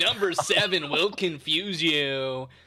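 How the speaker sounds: booming, slow, hyped online video host voice. Offering to narrate a top ten frozen pizza ranking: YouTuber voice. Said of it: "I'll even do the YouTube voice for you".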